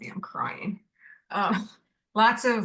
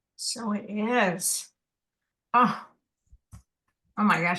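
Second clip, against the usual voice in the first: overwhelmed and choked up, close to crying. Speaker reacting right after a spoken blessing: about to cry. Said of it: "I'm going to cry now".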